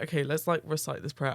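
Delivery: ordinary talk, nothing marked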